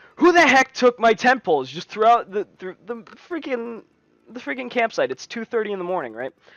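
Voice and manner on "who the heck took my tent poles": high, loud angry yell. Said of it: "I start yelling".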